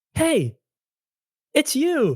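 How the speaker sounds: excited, high-pitched tone. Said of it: "so you're like".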